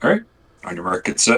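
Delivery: raspy stage whisper. Player in a game signals a partner before a combat move, raspy stage whisper. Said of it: "the way that raspy voice is stealthy".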